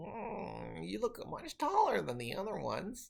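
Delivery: very high, sing-song, swooping creature voice. Voicing a creature speaking to a player in its strange language: voicing the creature. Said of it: "the one closest to you looks at you and says".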